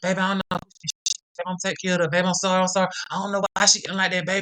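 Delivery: repeated begging, pleading voice. Retelling how her old man held her down: imitating him begging and pleading. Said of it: "just begging and pleading".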